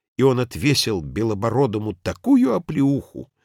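usual speaking voice

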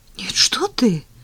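scared, frightened, fearful voice. Tanya answers Zhenya, who asks if he can come over: frightened. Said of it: "испуганно сказала Таня".

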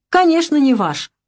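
firm, resolute tone. Tanya answers Vera, who says the house is not theirs; firmly. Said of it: "твердо сказала Таня".

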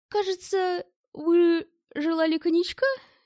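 sly, mocking voice. Facing a threatening priest, a character puts a question, snide. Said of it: "ехидно спросил".

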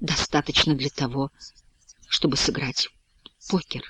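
faint, low, faltering voice, distant-sounding. Answering a question in the circle, he speaks in a barely audible, faltering voice. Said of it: "отвечает Бушуа едва слышным, прерывающимся голосом".

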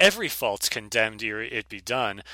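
usual speaking voice

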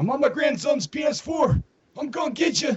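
put-on very high, shrill elderly man voice. Imagining harassing people while playing Call of Duty, old man voice. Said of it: "with this old man voice, saying".

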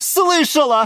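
very high-pitched, shrill yelled words. Antonina the geranium, to Galatea the orchid: shouting. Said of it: "закричала герань Антонина".

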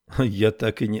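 plain reading voice

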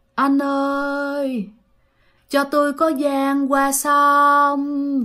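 faint, far-off ghostly woman's moan, drawn-out "ơi". Retelling a woman's voice heard near a mansion at night, imitating a moaning woman's voice. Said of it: "kêu mà rên rỉ mà nó văng vẳng".

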